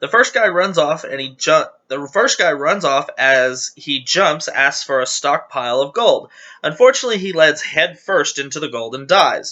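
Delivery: plain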